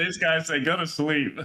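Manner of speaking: high-pitched mocking imitation voice.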